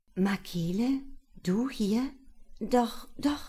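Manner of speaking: stammering, embarrassed. Julia answers Makele, who finds her in the hospital; stammering, embarrassed. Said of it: "stotterte Julia verlegen".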